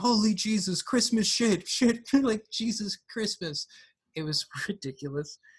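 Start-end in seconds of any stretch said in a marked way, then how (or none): 0.0-3.7 mock shouting, much higher pitch. Recalling a character grabbed by Jason, the speaker mimics his outburst: imitating Axel shouting. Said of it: "he was literally shouting".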